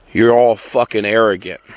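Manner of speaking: usual speaking voice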